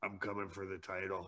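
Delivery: barely audible, soft, close half-whisper into the ear. Retelling how a drinking brother half-whispered a challenge at a party: imitating a half-whisper. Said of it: "he'd whisper in my ear".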